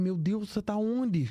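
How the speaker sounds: mock distraught sobbing, high, tearful crying voice. Retelling how grandmother reacted to an audio message: imitating grandmother crying.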